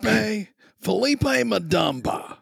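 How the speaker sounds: put-on drunk voice, high, rough, nasal, slight Texas accent. Trying out a character's voice after asking the game master: drunk, high, nasally voice. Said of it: "he's real drunk... a little bit from Texas".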